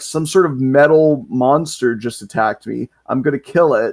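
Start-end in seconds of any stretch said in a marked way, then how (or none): none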